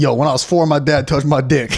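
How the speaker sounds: usual speaking voice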